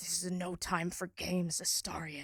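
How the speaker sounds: tortured, under the breath. Voicing Shadow answering Astarion: tortured, said under his breath. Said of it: "torturedly, um, kind of say under his breath".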